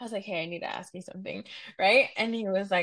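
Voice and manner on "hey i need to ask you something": play-acted sober, serious, earnest tone. Retelling asking a coworker a question: imitating own serious tone. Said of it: "I said that with a serious tone".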